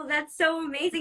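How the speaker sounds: while laughing. A host reacts to someone asking to be on Chops, laughing.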